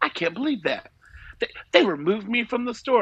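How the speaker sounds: high, very dramatic, theatrical aggrieved tone. Retelling a lady's complaint about being removed from the store, imitating someone being dramatic. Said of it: "very, like, dramatic".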